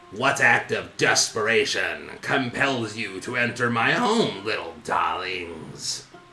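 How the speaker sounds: low, croaky toad-creature voice. Running a game scene, the narrator voices a toad-like creature greeting visitors in a low croaking voice. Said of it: "speaks to you with a low, croaking voice".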